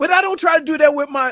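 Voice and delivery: high, loud, indignant outburst.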